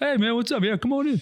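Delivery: very high, super friendly, nicest-guy-ever voice. Imagining a feared warlord greeting a visitor: imitating Will as super friendly. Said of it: "nicest guy in the world".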